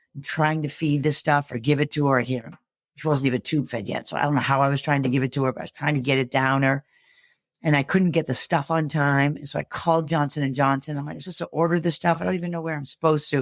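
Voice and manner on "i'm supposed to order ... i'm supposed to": mock panic, fast and scrambling. Retelling a phone call ordering feeding supplies: imitating own panicked voice. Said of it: "I would have had that panic in my voice".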